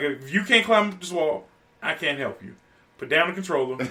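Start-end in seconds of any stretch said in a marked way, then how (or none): none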